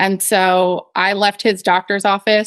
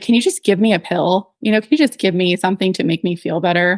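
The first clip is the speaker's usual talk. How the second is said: put-on tearful pleading voice. Retelling begging a doctor for a pill while sobbing: retelling own tearful begging. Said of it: "I actually begged him".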